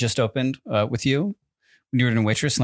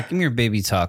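usual speaking voice

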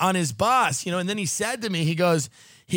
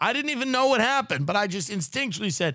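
plain

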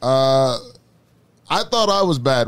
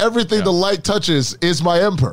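normal talking voice

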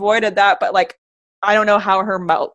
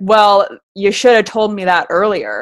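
mock-rude, imitated rude tone. Retelling a woman's reply after she offered a drink, in a mock-rude tone. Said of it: "Like super rude about it".

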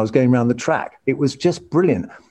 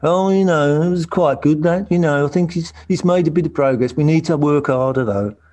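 put-on English Midlands accent; 3 semitones higher than usual. Retelling what a former teammate said after a drive: Nigel Mansell impression. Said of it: "my Nigel Mansell impression".

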